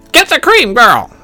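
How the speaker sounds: sharp, snapping tone. Narrator reads Grandma snapping an order at the girl. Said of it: "snapped Grandma".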